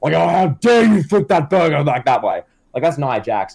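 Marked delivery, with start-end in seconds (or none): 0.1-2.4 put-on, angry, berating scolding yell. Acting out a district manager scolding a young employee: imitating someone yelling. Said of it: "Nia Jax will just yell at these".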